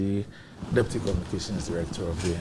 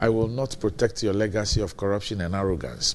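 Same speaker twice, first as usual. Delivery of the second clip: ordinary delivery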